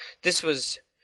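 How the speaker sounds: ordinary delivery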